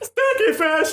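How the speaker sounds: high, squealing, shouted voice. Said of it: "that's exactly how he talked like that".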